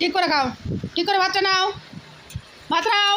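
high, loud, insistent pressing tone.

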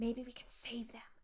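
soft, hushed whisper. The narrator whispers back to Josh, backing away from the tree: whispering. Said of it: "I whispered back".

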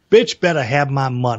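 normal talking voice

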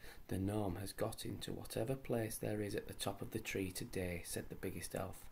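ordinary delivery, nothing marked

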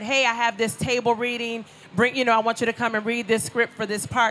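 ordinary delivery

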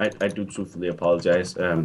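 deep, stiff, mock solemn tone.

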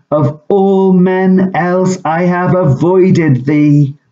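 high, cried-out voice. In battle, Macbeth comes face to face with Macduff and cries out. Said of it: "he cried".

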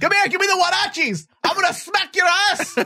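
very high, furious, angry mom voice. Telling a co-host how Mexican mothers punish kids, imitating an angry Mexican mother.

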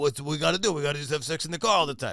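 put-on stupid, dumb-dude accent. Speaker showing the accent put on when being a dumb dude, stupid dumb-dude accent. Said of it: "With that stupid accent".

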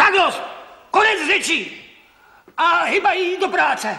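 very high, shrill, yelled shout. A father ends the argument and orders his son back to work; shouting. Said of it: "nekřič".

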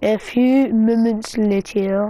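fake, bad French accent, very slow and drawn out. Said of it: "I got a bad French accent".

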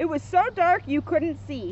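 ordinary delivery, nothing marked

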